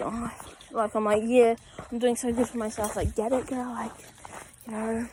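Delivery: plain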